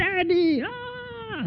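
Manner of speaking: put-on high, panicked, screaming child's cry.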